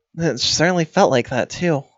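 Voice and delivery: muttered under the breath. Muttering a line in character, loud enough to be overheard: hushed, under the breath. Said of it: "hushed and, uh, under my breath".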